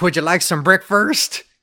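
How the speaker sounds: put-on rural country accent. Joking about how breakfast gets said deep in the country: exaggerated inbred country accent. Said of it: "the way to say breakfast in, like, super inbred country".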